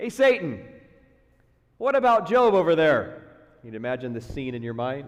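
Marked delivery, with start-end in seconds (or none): 0.0-3.2 sarcastic, loud, swooping taunt. Speaker imagining God addressing Satan about Job, imitating God trash-talking. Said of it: "I kind of hear a little divine trash talking".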